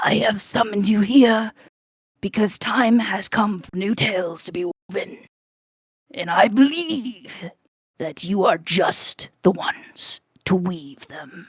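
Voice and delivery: rough, raspy yet kind voice. Narrating, a retired adventurer welcomes his friends in a raspy, kind voice. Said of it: "he says with a raspy, kind voice".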